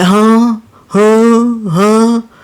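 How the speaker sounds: repeated, drawn-out huh, lost and baffled. Retelling how the lady answers her son, imitating her confused "huh". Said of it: "she be like".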